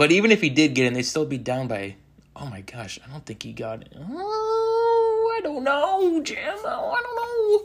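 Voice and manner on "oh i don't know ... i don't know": very high pitch, word "oh" drawn out. Watching a goal-line replay, doing a Tony Romo impression. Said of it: "Trying to do my best Tony Romo impression there".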